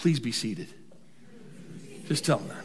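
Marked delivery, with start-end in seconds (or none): 0.0-0.7 put-on polished, courteous, most diplomatic tone. Showing the congregation how to tell a neighbor: put-on diplomatic voice. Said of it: "in your most diplomatic voice".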